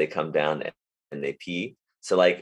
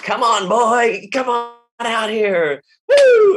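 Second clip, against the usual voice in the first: super excited, very loud, very high voice; 8 dB louder than usual. Describing the Bob and Louie dog act, imitating Bob's excitement. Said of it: "is very excited".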